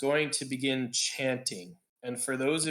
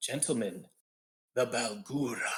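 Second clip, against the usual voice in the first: hushed whisper; 2 semitones lower than usual. Narrating a game, voicing a summoner who points out the door: whispering. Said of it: "And she whispers".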